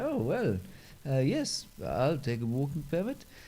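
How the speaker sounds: put-on Swedish accent. Describing a visitor from Sweden accepting a walking permit: Swedish accent. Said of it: "That was my Swedish accent".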